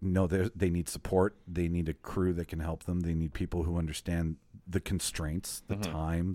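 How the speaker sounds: usual speaking voice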